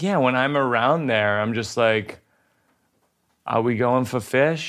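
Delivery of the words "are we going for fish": Massachusetts-area accent. Showing how speech changes when back home: put-on Worcester Massachusetts accent. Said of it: "I do that in Massachusetts for sure".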